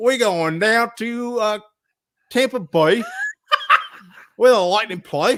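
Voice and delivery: put-on Australian accent, loud and swooping. Doing a segment deliberately in an Australian accent. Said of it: "I gotta walk in uh, an Australian accent".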